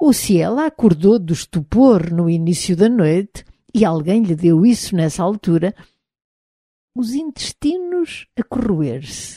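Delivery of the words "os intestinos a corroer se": soft, slightly raised bitter murmur, half to oneself. Reading a story, a man replies in conversation, murmuring. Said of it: "murmurou Roger".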